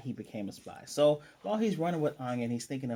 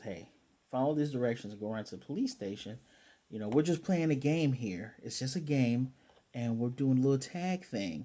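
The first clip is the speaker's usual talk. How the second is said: ordinary talk, nothing marked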